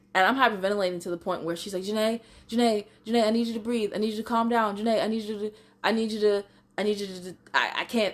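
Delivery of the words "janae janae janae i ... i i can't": put-on stutter in a higher voice. Retelling how a woman tried to calm the speaker down, imitating someone stuttering. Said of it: "she's stuttering too".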